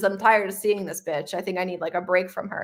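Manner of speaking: ordinary talk, nothing marked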